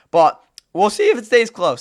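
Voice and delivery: voice breaks partway through. Speaker previews a Rams football game, with a bad voice crack. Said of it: "That was a bad voice crack".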